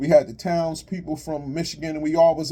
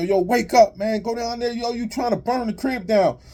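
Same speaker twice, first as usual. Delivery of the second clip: mock high-pitched hollering; 7 semitones higher than usual. Retelling yelling out the window at Francis asleep by a burning grill, retelling a yell. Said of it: "I'm yelling out the window".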